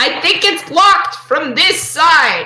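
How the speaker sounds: put-on loud 1920s old-timey transatlantic voice. Voicing Hazel telling another character the door is locked: loud 1920s North Atlantic voice. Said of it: "nineteen twenties North Atlantic sort of".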